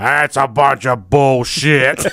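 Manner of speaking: put-on slow, grumbling, grumpy old man voice.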